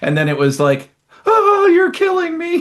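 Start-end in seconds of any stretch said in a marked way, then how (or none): 1.3-2.6 mock very high squeal like a little child. Retelling how a man who had talked bravely reacted, mock-screaming like a schoolchild. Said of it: "he was screaming like a little school child".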